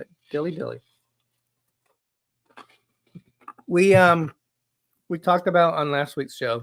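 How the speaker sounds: speaking around mouthful of ice. Talking to Danny on the show, talking while crunching ice. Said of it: "Sorry, I'm crunching ice".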